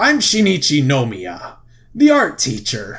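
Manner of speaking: slow, pompous voice drifting into a pirate voice. Trying out a voice for the art teacher, the speaker sounds like a pirate. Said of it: "He kind of sounds like a pirate now".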